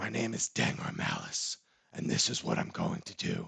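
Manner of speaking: super deep and rough voice. Speaker demonstrates how his campaign character has talked all along, super deep Batman voice. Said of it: "has that super deep".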